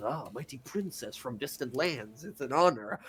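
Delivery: giant python snake voice. Narrator voicing a giant python that greets the princess character; giant python snake voice. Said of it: "You find a gigantic sort of python snake".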